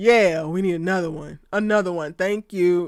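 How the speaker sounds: earnest, dead-serious delivery. Imitating the other speaker's remark, which sounded serious: imitating someone sounding serious. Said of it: "you sounded like".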